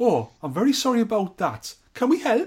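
put-on Geordie accent. Playing a Geordie call-centre worker answering a complaint: imitating a Geordie accent. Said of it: "you can't be angry at a Geordie".

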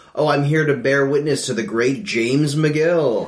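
put-on pompous sarcastic tone. Imagining Chuck addressing Jimmy: mock-pompous Chuck, sarcastic. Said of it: "in a like a pompous way, sarcastically saying".

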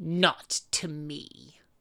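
put-on sinister villain voice. Retelling how Lucius answers in a scene, a mock-sinister Lucius impression. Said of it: "All sinister and".

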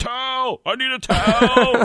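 acted, very high, very slow, drawn-out screaming. Retelling a player screaming for a towel: imitating LeBron James screaming. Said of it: "just started screaming at a towel boy".

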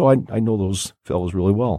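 ordinary delivery

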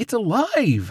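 very high, shrill, loud exclaiming cry. Tearing off her glasses, the first girl realizes the crow is real, exclaiming. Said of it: "The first girl exclaimed".

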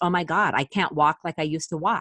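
ordinary talk, nothing marked

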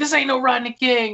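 mock loud, high-pitched bellowing yell. Retelling a character's line from a police standoff scene, retelling a loud yell. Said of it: "very loudly".

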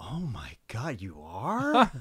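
very slow, shocked, horrified, swooping, drawn-out voice. Retelling a classmate's reaction to hearing he was from Canada: imitating a horrified reaction. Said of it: "the immediate horrified reaction from the one girl".

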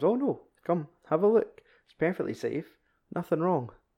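mock soothing coaxing. Retelling a sinister film scene, quoting a character: imitating someone nice and calm. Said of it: "he's just all nice and calm".

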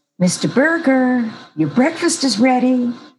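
cheery announcer voice. Describing how the housekeeper might have announced breakfast, imitating a nice cheery voice. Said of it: "in a nice, cheery voice".

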